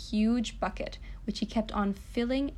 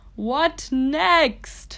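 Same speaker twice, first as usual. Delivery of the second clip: high, very loud booming voice; 5 semitones higher, 9 dB louder than usual. Reading a story, the goblin speaks to his master: booming. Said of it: "boomed Hairy Lugs".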